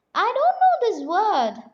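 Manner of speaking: high, squeaky little elf voice. Reading a story aloud to children, the elf's line in a squeaky elf voice. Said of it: "the elf squeaked".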